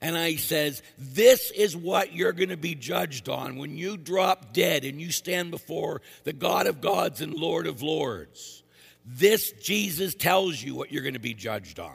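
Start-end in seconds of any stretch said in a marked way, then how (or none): 1.0-11.9 put-on screaming, higher and louder. Retelling screaming at the men: imitating own past screaming. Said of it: "as I start screaming at the men".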